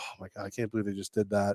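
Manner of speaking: mock fond yet grossed-out, disbelieving outburst. Imitating an adult watching a baby, imitating a loving, disgusted adult. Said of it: "Both lovingly and disgusted".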